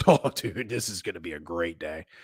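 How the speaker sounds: sarcastic, meaning the opposite. Reacting to a game starting at three oh seven on Wednesdays: sarcastic. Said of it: "I know for a fact this is sarcastic".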